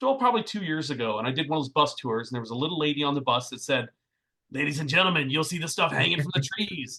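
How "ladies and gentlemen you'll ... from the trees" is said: put-on raspy voice. Retelling a little lady's announcement on a bus tour, in a raspy smoker's voice. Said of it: "she had this really like smoker's voice".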